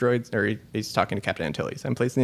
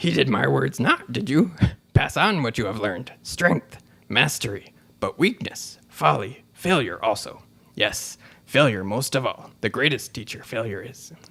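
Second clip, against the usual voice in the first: slow, measured, deliberate sage voice, every word weighed; 2 semitones higher than usual. Reading out a quiz line in Yoda's voice. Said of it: "I'm gonna try and do it in Yoda's voice".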